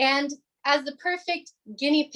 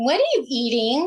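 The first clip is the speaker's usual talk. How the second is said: mocking, annoying little-kid voice; 4 dB louder than usual. Handed the floor by the host, imitating your little brother's annoying voice. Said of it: "that was my little brother's annoying voice".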